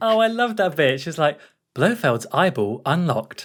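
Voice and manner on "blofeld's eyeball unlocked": female, robotic computer system announcement voice. Quoting a line from the film's computer, in a computer woman voice. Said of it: "computer woman voice".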